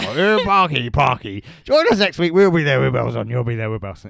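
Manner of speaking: put-on gruff old talk-show host voice. Doing an impression of a chat show host: gruff Michael Parkinson impression. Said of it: "It's a gruff voice".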